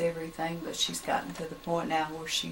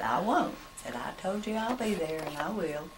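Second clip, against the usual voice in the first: normal talking voice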